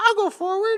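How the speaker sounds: squeaky, very high voice. Imagining how David would say this line, squeaky high David voice. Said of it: "with a squeaky high voice".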